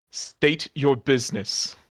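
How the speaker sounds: suspicious, accusing, accusatory tone. Narrator voicing someone calling out to the approaching party, accusatory. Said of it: "in an accusatory tone says".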